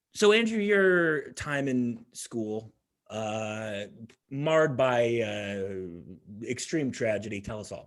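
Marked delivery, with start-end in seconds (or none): none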